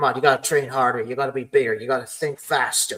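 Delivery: plain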